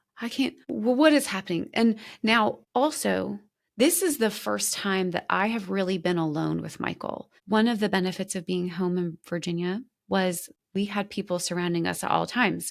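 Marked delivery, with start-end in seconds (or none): 0.2-1.7 put-on crying, high, tearful, words breaking off mid-start. Retelling breaking down after hearing her name: retelling own tearful words. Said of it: "the waterworks start coming".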